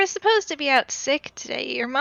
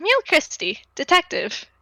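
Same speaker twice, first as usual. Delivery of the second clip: put-on high, smug, horrible little anime boy voice; 5 semitones higher than usual. Voicing a little anime boy who smiles while introducing himself: horrible little anime boy voice. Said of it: "playing a horrible little anime boy".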